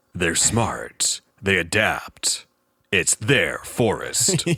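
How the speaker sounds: slow movie trailer announcer voiceover. Repeating a quote to another speaker as a joke: movie trailer voiceover voice. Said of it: "That sounds like a movie trailer voiceover".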